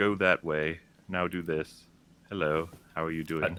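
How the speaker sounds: boring, toneless delivery. Mocking a game voice actor's delivery, in a flat monotone voice. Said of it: "make your voice as flat and monotone".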